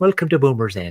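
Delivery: attempted English accent. Welcoming listeners to Boomers End, attempting a put-on English accent. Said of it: "I'm supposed to be in England".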